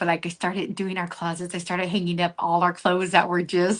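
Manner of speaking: secretive, low, hushed half-whisper under the breath. Telling the other speaker something your husband shouldn't know, half-whispering. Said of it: "I have to whisper".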